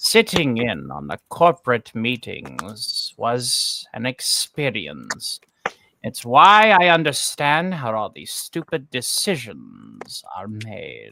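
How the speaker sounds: spooky, creepy put-on voice with swooping pitch. Asked to read a message in any chosen voice: Vincent Price voice. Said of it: "I will choose Vincent Price".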